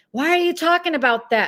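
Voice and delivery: sudden, high-pitched screaming. Retelling how he screams at a sub: imitating someone screaming. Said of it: "he starts screaming at a sub".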